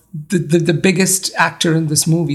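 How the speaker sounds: usual speaking voice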